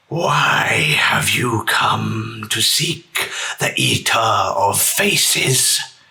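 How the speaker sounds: echoing, ringing monster voice. Storyteller voicing an unseen being calling out of the darkness: echoing voice from the darkness. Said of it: "you hear this voice emanating out of the darkness".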